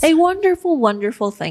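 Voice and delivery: faint sarcasm. Finishing another speaker's sentence about working with clients, a little sarcastic. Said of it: "That sounded a little sarcastic".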